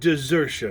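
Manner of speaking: emphasizing the word 'desertion'. Long John, chosen captain by the lads, answering the captain, stress on 'desertion'. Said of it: "laying a particular emphasis on the word desertion".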